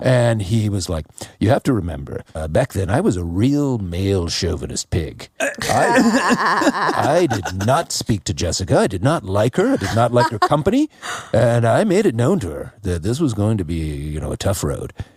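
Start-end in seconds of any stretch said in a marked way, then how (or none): 1.4-14.9 put-on swooping broadcast newscaster voice. Retelling a retired colleague's sound bite from a TV special, imitating a newscaster voice. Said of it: "spoke in a, a, a newscaster voice".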